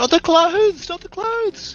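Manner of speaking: yelling out. Voicing a character whose clothes start to catch fire: yelling out. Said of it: "Chase yells out".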